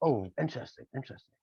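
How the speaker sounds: put-on very posh accent. Retelling a man's reaction to hearing his record, imitating a very posh voice. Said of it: "very, very posh".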